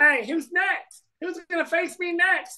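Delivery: squeaked out very high. Retell what Cole says on the mound after the strikeouts, in a Mickey Mouse voice. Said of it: "Like sounding like Mickey Mouse".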